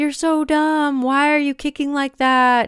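high, belittling, berating coach yell. Describing an example from a book of a swim coach berating a kid, retelling a coach yelling. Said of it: "just yelling at his kid".

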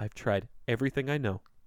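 utterly beaten, defeated, dejected tone. Retelling a cartoon scene, imitating defeated Buster. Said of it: "Buster's just so defeated".

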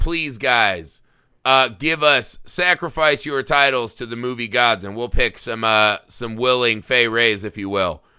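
ordinary talk, nothing marked

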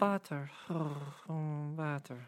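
hushed, pleasurable feminine moan. Describing a feminine voice heard moaning the word butter, imitating Daisy's pleasurable moaning. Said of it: "probably a pleasurable moaning".

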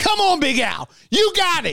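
very high, swooping, encouraging cheering yell. Retelling a scene at a funeral: imitating Sonny Hill yelling. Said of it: "just yelling at Big Al".

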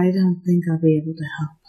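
muttering under the breath. As narrator, voicing a character muttering under her breath. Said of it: "Teva mutter something along the lines of".

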